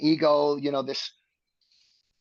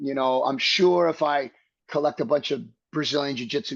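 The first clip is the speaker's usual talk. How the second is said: ordinary talk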